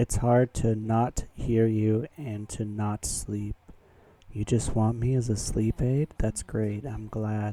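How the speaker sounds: ASMR-style soft delivery. Speaker answers a listener who uses them as a sleep aid, in asmr voice. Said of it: "Enjoy my A S M R voice".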